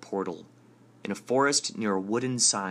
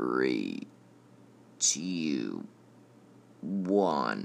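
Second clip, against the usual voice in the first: very deep, machine-like robot voice; 9 semitones lower than usual. Narrator reads the countdown before the arcade game starts, in a robot voice. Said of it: "a robot voice counts down".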